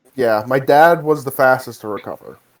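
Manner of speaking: ordinary delivery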